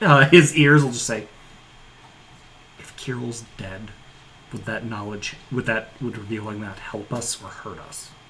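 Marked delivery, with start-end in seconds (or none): 2.8-8.1 hushed, barely-there half-whisper. Voicing a character who asks a quiet question: half-whispering in character. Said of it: "even quieter, as though, like, attempting to not let the whisper go past".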